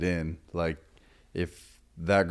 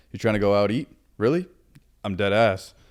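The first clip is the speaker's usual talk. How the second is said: laid-back, casual, slangy youthful talk; 4 semitones higher, 7 dB louder than usual. Showing how to talk like the youngsters: casual youthful slang. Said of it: "you have to almost go like".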